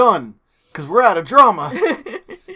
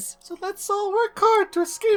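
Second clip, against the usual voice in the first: put-on girl falsetto voice, much higher; 13 semitones higher, 6 dB quieter than usual. Trying to recall how Kaede said her line, attempted Kaede falsetto voice. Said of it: "I can't do falsetto".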